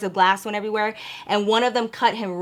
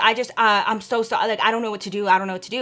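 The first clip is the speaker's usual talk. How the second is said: put-on stutter, faster. Retelling a phone call, the speaker quotes David: imitating David stuttering. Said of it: "he was just stuttering".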